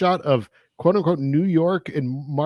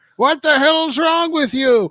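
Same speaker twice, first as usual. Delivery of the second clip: put-on high, loud yelling granny voice. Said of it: "started shouting at me".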